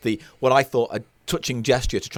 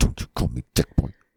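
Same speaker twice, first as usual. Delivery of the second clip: fake little angry voice; 11 semitones lower than usual. Objecting to being called dick boy: mock angry little voice. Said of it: "you do that little angry voice".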